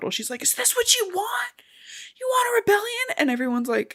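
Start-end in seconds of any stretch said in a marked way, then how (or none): 0.4-3.1 furious shrieking scream, way up in pitch. Retelling a character's outburst at the Capitol: imitating Joanna screaming. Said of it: "she's screaming at the Capitol".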